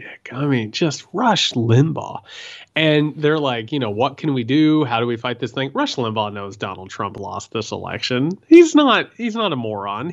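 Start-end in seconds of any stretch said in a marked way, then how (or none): none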